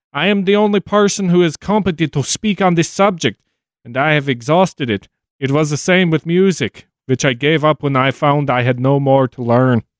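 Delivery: attempted, tried-on Dutch accent. Reading out a quote within a quote: attempted Dutch accent. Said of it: "I should stop trying a Dutch accent".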